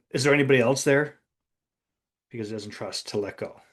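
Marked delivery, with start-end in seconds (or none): none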